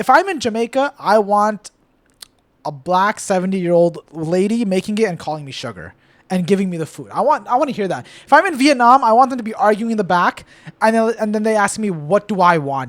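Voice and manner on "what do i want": plain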